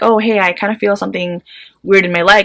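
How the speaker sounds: plain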